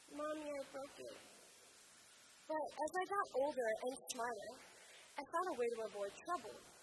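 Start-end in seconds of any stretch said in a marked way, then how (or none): 0.2-1.1 put-on wretched, crying six-year-old child voice. Recalling confessing to their mother as a child, imitating a miserable six-year-old. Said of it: "in the most miserable voice a six-year-old can muster".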